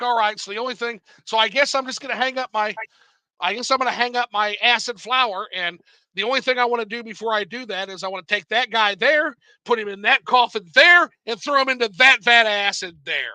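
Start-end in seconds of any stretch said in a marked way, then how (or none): none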